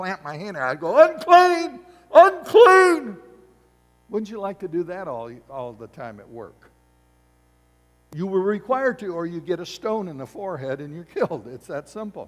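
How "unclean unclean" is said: shrill, very loud, high, top-of-the-lungs yell. Acting out being required to warn anyone seen, yelling at top of voice. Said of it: "I'm yelling at the top of my voice".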